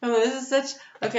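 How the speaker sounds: giggly speech broken by laughter. Reading cards that seem to repeat, laughing while talking. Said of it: "I'm laughing".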